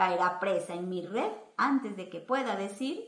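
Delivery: ordinary delivery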